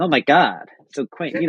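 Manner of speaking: rough imitation of an American accent. Acting out tourists reacting as they go in; sort of american accent. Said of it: "sort of American accent".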